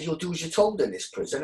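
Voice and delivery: mock menacing, stern, threatening officer voice. Retelling what a prison officer said: imitating a threatening prison officer. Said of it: "in a very threatening manner".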